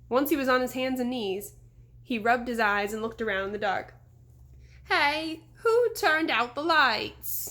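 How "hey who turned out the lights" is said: whiny, high-pitched, very slow, drawn-out. A narrator reads a man waking in the dark and calling out, whiny, high-pitched voice. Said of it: "he called in a whiny, high-pitched voice".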